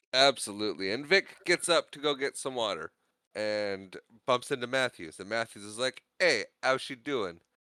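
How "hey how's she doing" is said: put-on thick, heavy, laid-on New York accent. Retelling how Matthews greets Vic after they bump into each other, heavy New York accent. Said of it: "I gave him the heavy New York accent there".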